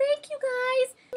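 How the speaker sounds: very high, small, strange, weird voice. Retelling a scene seen on television: imitating a little weird voice. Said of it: "this little weird voice says".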